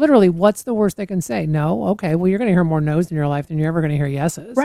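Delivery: ordinary talk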